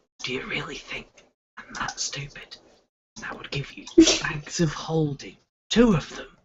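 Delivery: hushed, soft, breathy, menacing whisper. Game narrator voicing a character who leans close to the player, whispering. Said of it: "he just whispers to you".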